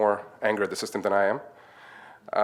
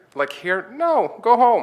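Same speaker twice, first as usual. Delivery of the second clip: much higher and louder sharp-toned voice. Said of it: "exactly how she reacted with that tone".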